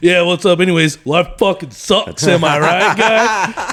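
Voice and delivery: mock grumpy, commiserating, bad-attitude tone. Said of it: "The way you make it sound, [name], when you say it that way".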